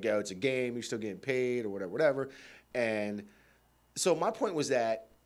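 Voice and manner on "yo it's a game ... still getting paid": usual speaking voice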